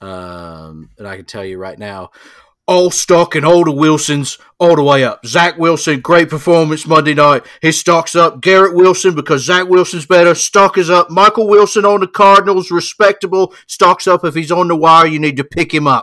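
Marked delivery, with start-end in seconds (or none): 2.7-16.0 very loud, pitched-up, put-on English accent. The speaker shows the voice they do when checking the waiver wire: English fantasy-football guy voice. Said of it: "English guy that's way into fantasy football".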